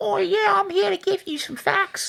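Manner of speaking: very high, squeezed, creaky, rough character voice. Voicing Little Orphan Annie arriving to give facts: Little Orphan Annie voice. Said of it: "I have no idea what Little Orphan Annie sounded like".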